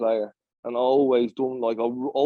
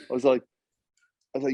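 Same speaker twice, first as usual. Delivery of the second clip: ordinary talk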